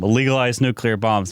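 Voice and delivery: ordinary talk, nothing marked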